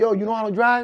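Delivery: put-on high voice, speaking through laughter. Retelling a court hearing, quoting the judge: imitating a laughing judge. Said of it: "the judge is laughing like".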